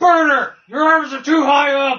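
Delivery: put-on screaming. Voicing a figure in a picture screaming at Berger: put-on screaming. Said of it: "he's screaming at Berger".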